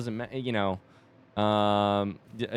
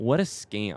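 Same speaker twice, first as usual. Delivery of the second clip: put-on heated, upset tone; 3 semitones lower than usual. Retelling a runner's upset complaint about his race result: imitating a heated complaint. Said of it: "some heat in his voice".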